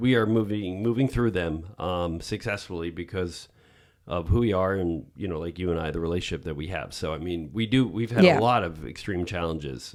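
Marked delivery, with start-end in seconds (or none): none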